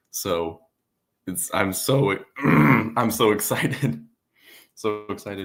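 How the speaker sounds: nervous voice, cracking and breaking. Excited to see people talking on the server again, voice cracking. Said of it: "My voice is cracking".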